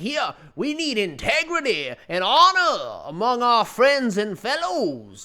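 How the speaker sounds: over-the-top Georgia drawl, slow and swooping. Imitating a man in South Carolina who calls people out, with a caricature of a Georgia accent. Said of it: "sounds like a caricature of a person from Georgia".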